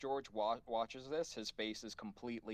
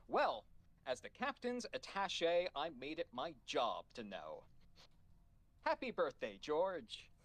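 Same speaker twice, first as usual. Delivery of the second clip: radiant, beaming, swooping sing-song delivery; 4 semitones higher than usual. Vim speaks to a crewmate at his birthday cake: Vim, beaming. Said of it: "Vim is beaming at this point".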